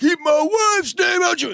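very high, screaming outburst. Retelling a slap over a joke and a scream from the fourth row: imitating someone screaming. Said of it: "and screaming".

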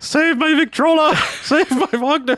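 put-on German accent. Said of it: "doing a really bad, you know, German accent".

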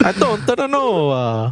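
bad put-on Italian accent. Imitating the Pope sitting next to a speaker: terrible Italian accent. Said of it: "I already did a terrible Italian accent".

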